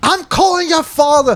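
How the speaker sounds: mock very high, shrill, shrieking yell. Retelling a kid's mom screaming from the house: imitating a screaming mom. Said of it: "she's just fucking screaming".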